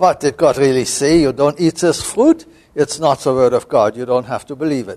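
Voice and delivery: put-on speech in a German accent. Retelling how a colleague voices the Genesis serpent, serpent with German accent. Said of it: "likes to give the serpent a German accent and say".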